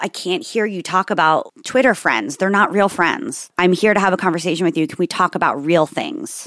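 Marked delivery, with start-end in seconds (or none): none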